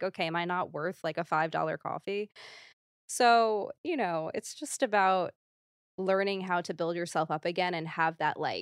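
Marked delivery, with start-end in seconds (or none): none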